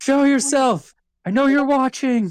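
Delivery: put-on yelling, voice way up high. Recalling yelling into the void at an unseen watcher: retelling a shout. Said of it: "was just yelling out".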